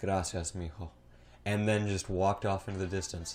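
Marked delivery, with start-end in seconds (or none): 0.0-0.9 put-on kind-hearted, sweet-toned, kindly delivery. Retelling a stranger's thanks for a held door: imitating a sweet, kind tone. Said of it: "said in such a sweet tone".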